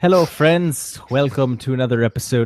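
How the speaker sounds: put-on accent sounding Irish. Host opening an episode, trying out an accent: failed North Dakota accent attempt. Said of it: "was gonna try to do a North Dakota accent".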